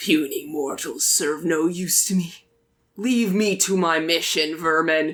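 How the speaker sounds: demon dog hellhound voice. Voicing a demon dog who dismisses the players: demon dog voice. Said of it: "Its eyes kind of narrow at you and says".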